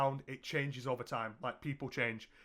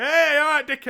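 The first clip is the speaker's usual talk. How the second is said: exaggerated persona voice, very loud and very high; 13 semitones higher, 14 dB louder than usual. Showing how they talk in their videos, loud exaggerated video voice. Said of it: "in videos, I'll be like".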